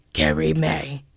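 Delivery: low, demonic, monster-like voice. Retelling how someone repeated each girl's name after her introduction, in a demonic-sounding voice. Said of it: "with a kind of demonic sounding voice".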